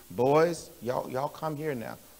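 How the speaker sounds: steady, calm, unraised grandfatherly voice. Retelling how grandfather called the fighting boys: imitating grandfather's calm unraised voice. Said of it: "I never seen my grandfather raise his voice ever".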